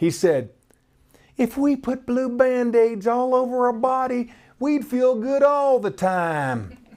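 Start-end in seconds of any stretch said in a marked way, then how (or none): 1.4-6.7 put-on little Texas accent, pitched up. Retelling what a boy with a Band-Aid said, imitating his little Texas accent. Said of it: "in his little Texas accent".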